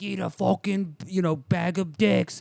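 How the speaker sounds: put-on Long Island accent. Retelling a call, act out the other guy cussing, imitating a Long Island guy. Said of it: "some other guy like in Long Island be like".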